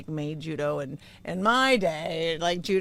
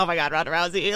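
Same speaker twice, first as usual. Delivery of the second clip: put-on nervous, gushing voice; 3 dB louder than usual. Retelling how he acted around her at first: imitating someone nervous. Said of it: "how, like, nervous he was around me".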